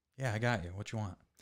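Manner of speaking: terrifying, scary, menacing tone. Retelling a pickup order call, imitating the man who took it: put-on scary voice. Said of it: "You sound scary when you're using his voice".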